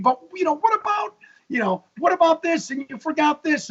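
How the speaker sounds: play-acted frustrated screaming. Retelling watching a documentary from the couch: imitating own screaming. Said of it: "I'm screaming".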